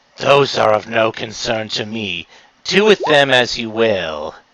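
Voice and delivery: low, scornful, contemptuous villain half-whisper. Asked whether they may kill his servants, the Boogeyman answers, Boogeyman half-whispering. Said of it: "as the former king of ha- Halloween Town, and the boogeyman appears before you. / uh, the boogeyman seems to be looking at that thing in with if contempt. / And he whispers, / you can't exactly tell t".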